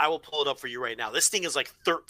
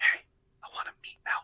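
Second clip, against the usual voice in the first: hushed, hush-hush whisper. Showing how someone might order at the counter: imitating hushed tones. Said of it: "in hushed tones and be like".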